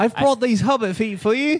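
very high-pitched, fumbled, bad New Zealand accent. Imitating someone bringing fans hobbit feet: attempted Peter Jackson Kiwi accent. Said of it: "I can't do a Kiwi accent".

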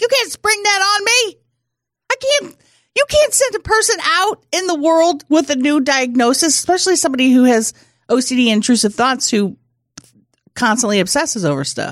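mock very high, playful, joking half-yell. Retelling what she yelled at him in the lobby on the way out: a joking yell. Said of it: "I'm yelling in the lobby, like yelling, but jokingly".

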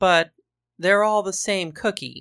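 usual speaking voice

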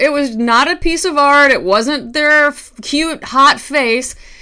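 all worked up. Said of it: "sorry, I'm all worked up right now".

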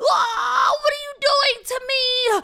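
very high, very loud, shrill yelp. Reading a story, a couch being cleaned by two girls cries out, yelping. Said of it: "The couch yelped".

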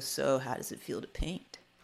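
smug, superior, self-satisfied tone. Retelling a question someone asked in class: imitating a smug tone. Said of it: "he turns to me smugly and he goes".

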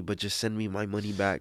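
ordinary talk

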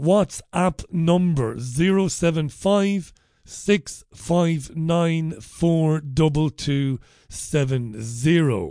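careful, slow, deliberate, digit-by-digit delivery. Reading a phone number out again for callers: reading slowly. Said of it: "This time I'll read it slowly".

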